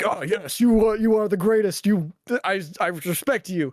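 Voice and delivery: put-on, very heavy Japanese accent. Retelling a film scene where one fighter calls out another: put-on Japanese accent. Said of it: "very in a Japanese way like".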